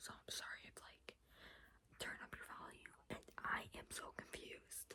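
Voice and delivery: hushed whisper, barely audible. Speaker's mom is upstairs; whispering so she won't hear. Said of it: "I am whispering because my mom is upstairs".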